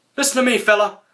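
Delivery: pushed very high pitch. Showing a Sheamus impression, admitted to be bad: Sheamus impression. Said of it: "that's my Sheamus impression".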